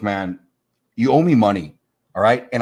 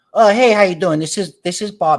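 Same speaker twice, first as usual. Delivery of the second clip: very high-pitched, voicemail-style voice; 9 semitones higher, 3 dB louder than usual. Retelling a voicemail greeting, imitating a voice like an accountant. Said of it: "It sounds like an accountant".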